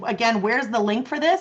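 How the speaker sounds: ordinary talk, nothing marked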